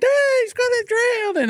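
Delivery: mock very high, alarmed, frantic shriek. Retelling a mother's words as a child struggles in the pool: imitating someone screaming. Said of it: "my mom's screaming".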